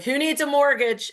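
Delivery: very high, shrill, loud shouted yell. Retelling a broker clapping in a diner: imitating someone yelling. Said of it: "and yell it out".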